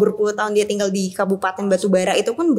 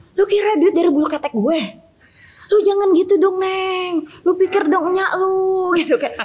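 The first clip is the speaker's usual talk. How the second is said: play-acted, very high, angry Jakarta-accented scolding; 10 semitones higher, 3 dB louder than usual. Acting out how Umi talks when she gets angry, mock-angry Umi in Betawi accent. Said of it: "kalau dia marah tuh kayak".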